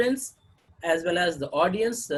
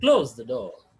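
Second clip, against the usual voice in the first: voice drops at the end on door; 7 semitones lower, 5 dB louder than usual. Saying the command close the door: falling tone at the end. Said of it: "It's it should be in the form of falling tone".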